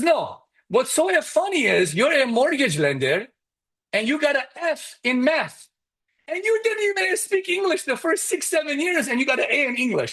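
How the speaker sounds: put-on Persian accent, pitched very high. Speaker quotes his mom's reply to him; imitating mom's Persian accent. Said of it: "use a Persian accent".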